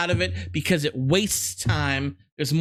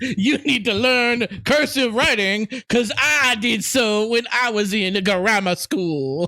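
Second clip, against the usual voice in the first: mock Southern aristocrat voice, much higher pitch; 5 semitones higher, 4 dB louder than usual. A speaker mocks boomers in a put-on voice: mock boomer, southern aristocrat voice. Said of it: "my boomer voice is a Southern aristocrat".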